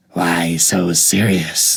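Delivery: crazy-sounding, gravelly, low voice. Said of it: "crazy, gravelly".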